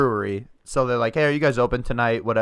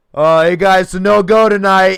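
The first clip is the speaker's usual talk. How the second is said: put-on drunk voice, higher and louder; 9 semitones higher, 12 dB louder than usual. Retelling a phone call from a caller: imitating a drunk caller. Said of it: "so drunk".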